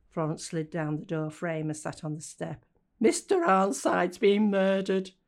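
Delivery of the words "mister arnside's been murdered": trembling, shaky voice, very loud and slow. Florence, sitting on the step beside Slip, in a shaky voice. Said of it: "she said in a shaky voice".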